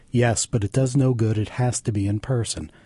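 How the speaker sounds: ordinary delivery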